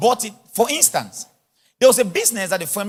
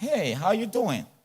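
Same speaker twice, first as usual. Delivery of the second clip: slow, fake, put-on American accent; 6 dB quieter than usual. Showing how he talks when he goes to the bank, put-on American accent. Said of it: "American accent".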